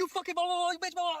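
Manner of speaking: acted, screeching, very high, shrill yelling. Retelling a date going off and pushing: imitating someone yelling. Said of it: "just yelling".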